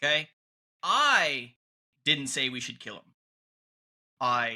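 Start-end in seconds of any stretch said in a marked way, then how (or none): 0.8-1.5 hard emphasis leaning on I. Showing listeners how stressing a different word changes a sentence, stress on I. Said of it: "Emphasize a different word in the sentence".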